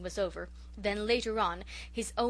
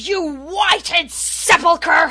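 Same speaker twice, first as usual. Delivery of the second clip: high, roaring bellow at very loud volume; 8 semitones higher, 17 dB louder than usual. A man meets his wife's eye and falls back on scripture, bellowing. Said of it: "he bellowed".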